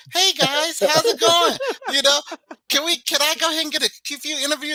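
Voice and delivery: very high put-on voice, all bass stripped. Retelling a planned walk-in greeting, taking all the bass out of the voice. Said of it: "I'm taking all the bass out my, out my voice".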